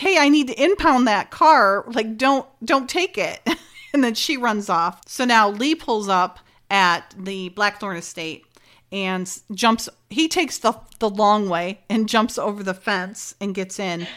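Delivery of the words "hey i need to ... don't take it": put-on yelling voice, higher pitch. Recapping a scripted scene, acting out a character's line; retelling a yell. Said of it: "Francine's yelling like".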